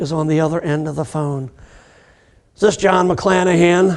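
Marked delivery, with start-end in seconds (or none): 2.6-4.0 put-on angry woman voice. Retelling a phone call, voicing the caller who asks for him: imitating an angry woman. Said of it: "this very angry female voice".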